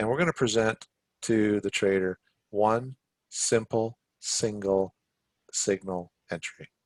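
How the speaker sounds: deliberately slow delivery. Speaker explaining a trading signal, said very slowly. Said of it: "I had to say that very slowly".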